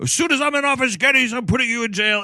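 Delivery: high, furious, angry yell. Retelling a scene where a man yells after another down the stairs: retelling a yell. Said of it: "he's yelling after him down the stairs".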